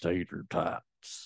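put-on grizzled southern accent. Host introducing this episode's topic in a grizzled southern drawl. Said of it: "I feel like you have to say it like that".

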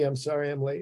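acted meek delivery. Retelling walking late into a meeting and apologizing: retelling a meek apology. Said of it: "I said very meekly".

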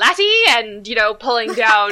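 loud, failed fake Scottish accent drifting into Irish. Speaker tries an accent while listeners laugh; bad Scottish accent. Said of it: "Was that even Scottish?".

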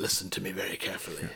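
bad put-on menacing movie-style voice. Quoting the dialogue from Taken: bad Liam Neeson impression. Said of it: "That's not a very good Liam Neeson".

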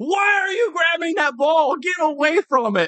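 high, slow yelled trash talk. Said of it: "we were all trashing the punt returner".

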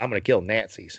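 put-on Southern accent. Imitating an actor's role in a movie: Brad Pitt Inglourious Basterds voice. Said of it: "more like Brad Pitt in Inglourious Basterds".

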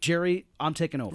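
ordinary delivery

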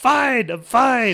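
very loud, very slow put-on grumpy old man voice. Retelling own reply when someone burst through the door: put-on grumpy old man voice. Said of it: "just like a grumpy old man".

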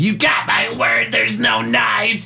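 high, slow scream. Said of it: "she's just screaming".

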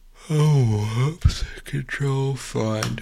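mumbled, yawned words with drawn-out "oh". Reading a book aloud for a recording, tired, yawning. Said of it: "sorry, I'm yawning".

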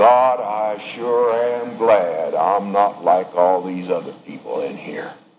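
muttering under the breath. Acting out the Pharisee praying in the parable: imitating muttering under breath. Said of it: "the Pharisee began to mutter under his breath and say".

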